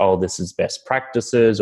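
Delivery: normal talking voice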